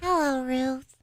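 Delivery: high little puppet voice. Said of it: "we'll do some Sammy the Snail".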